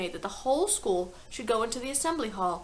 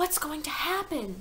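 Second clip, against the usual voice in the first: whispered, higher; 5 semitones higher than usual. A pupil asks another pupil while the whole school waits, whispered. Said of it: "Lavender whispered".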